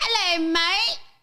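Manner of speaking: high-pitched put-on British accent slipping toward Australian. Showing a guest a self-judged good british accent. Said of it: "it kinda sounds like Australian".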